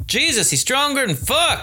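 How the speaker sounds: very high-pitched calling cry. During a fight, [name] speaks up over Mike's snarls, calling out. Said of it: "[name] called out over Mike's snarls".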